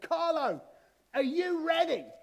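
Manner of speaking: very high, drawn-out shout at top of voice. Retelling the instructor at the open plane door: imitating a shout at full volume. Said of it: "shouted at the top of his voice".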